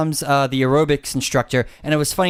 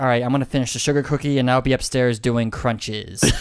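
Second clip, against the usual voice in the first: put-on deadpan delivery; 3 semitones lower than usual. Retelling a TV scene where Jill answers Beth: deadpan Jill imitation. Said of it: "She gives Beth this deadpan look and like".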